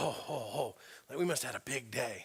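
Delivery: acted, very soft, hushed, eager and excited gush. Retelling coming home after a mailing campaign: imitating being all excited. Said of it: "I'm all excited".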